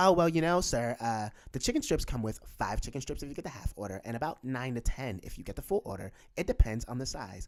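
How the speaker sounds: mock sweet, nice, courteous polite service voice. Quoting a man's answer about chicken strips in a mock-sweet polite voice. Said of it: "he said in his nice voice".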